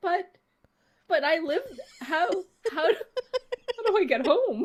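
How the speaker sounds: high, loud, flustered, sputtering, laughing in disbelief. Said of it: "And I was like".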